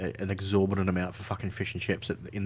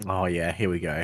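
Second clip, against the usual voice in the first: ordinary talk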